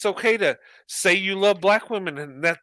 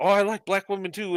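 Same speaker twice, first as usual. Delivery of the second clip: ordinary delivery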